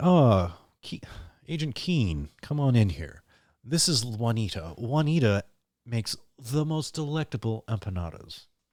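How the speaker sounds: chatty, rambling side-rant aside. Retelling a Blacklist scene in a James Spader impression. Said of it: "killer James Spader impersonation".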